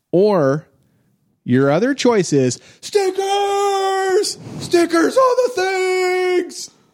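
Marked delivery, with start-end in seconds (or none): 2.8-6.7 really excited, very high cry, stickers stretched out. Reading out the second answer choice to the players, really excited. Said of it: "you got to say it like really excited".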